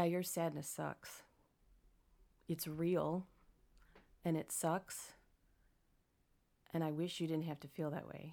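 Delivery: voice near tears, about to cry. Speaker answering a question, about to cry. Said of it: "I'm about to cry".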